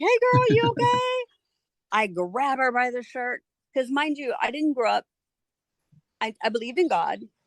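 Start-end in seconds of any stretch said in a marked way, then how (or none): 0.0-1.3 play-acted frightened, worried voice, very high-pitched. Speaker retells her mom coming in to check on her, imitating scared mom. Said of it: "She's scared".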